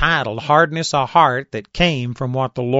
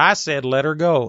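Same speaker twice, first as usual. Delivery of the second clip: normal talking voice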